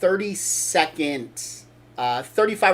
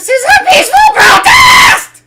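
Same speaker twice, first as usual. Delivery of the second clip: very high, loud, shrill screech climbing to a shriek; 16 dB louder than usual. Retelling a protest video, imitating a girl screeching the word protest. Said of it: "screeching the word protest".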